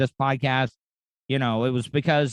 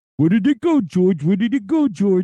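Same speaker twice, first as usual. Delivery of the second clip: high-pitched, loud cartoon voice; 7 semitones higher, 6 dB louder than usual. Practicing a cartoon voice from old commercials, Looney Tunes Vulture voice. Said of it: "I'm trying to get Vulture's voice down".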